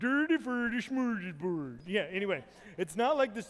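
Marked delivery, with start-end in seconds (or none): 0.0-1.8 goofy, broad, comic mock Swedish accent. Struggling to say smorgasbord, in a mock Swedish Chef accent. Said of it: "I'll just do it like the Swedish chef".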